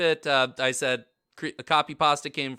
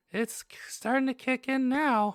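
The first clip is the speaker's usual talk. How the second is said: put-on drugged, dazed cartoon mouse voice; 9 semitones higher than usual. Continuing the joke voice after friends comment: Mickey Mouse on heroin voice. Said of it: "That's my new favorite [name] voice".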